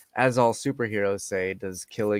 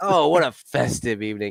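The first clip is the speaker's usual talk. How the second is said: put-on sarcastic voice, higher and louder; 3 semitones higher, 5 dB louder than usual. Quoting a character being sarcastic at a party: imitating Krennic, sarcastic. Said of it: "like, a sarcastic prick to Mon".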